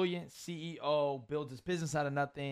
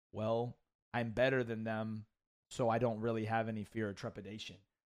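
put-on deadpan, matter-of-fact tone; 5 semitones lower, 4 dB quieter than usual. Speaker imitates a player answering interviewers on camera, imitating a deadpan reply. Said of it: "And he just deadpan at the camera and be like".

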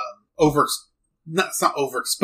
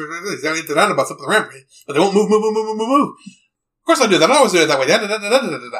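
high, rattled-off rapid-fire chatter. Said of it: "he talks like this".

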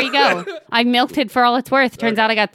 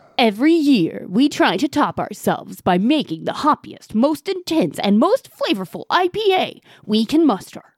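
put-on radio announcer delivery. Reading the bottle text aloud during a beer review: announcer voice. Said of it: "I got to read it in my announcer voice".

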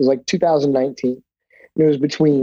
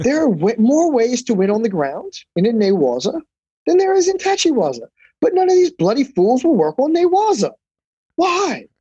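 put-on British accent, pitched higher; 9 semitones higher than usual. Retelling what the sensei said about judokas: Sensei Nick British accent. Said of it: "he had the really cool British accent".

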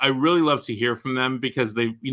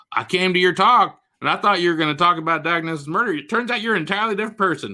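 teasing put-on Texas accent, higher pitch; 6 semitones higher than usual. Quoting a book-festival attendee, in a mocking texas accent. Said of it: "I don't know why I'm using that accent, because they're not from Texas".

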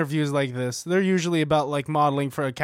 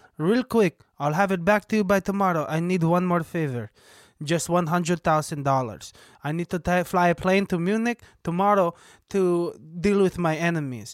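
put-on smooth Israeli accent; 3 semitones higher than usual. Quoting the Tinder Swindler's lines, in a good Israeli accent. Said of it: "You have a good Israeli accent".

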